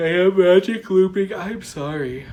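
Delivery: loud words stretched out by yawning. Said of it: "I don't know why I'm yawning".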